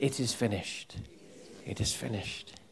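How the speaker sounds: hushed whisper, very quiet, barely audible. Leading everybody to repeat the phrase: whisper. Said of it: "Whisper it".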